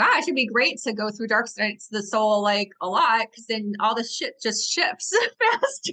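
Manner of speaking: sarcastic, tongue-in-cheek, sing-song musing. Talking about going through dark nights of the soul: sarcastic, joking. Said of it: "take this with my sarcastic grain of salt".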